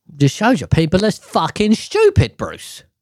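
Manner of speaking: high, swooping Aussie accent. Complaining that people are stupid, slipping into an Australian accent. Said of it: "Why did I go in a fucking, fucking Australian accent there".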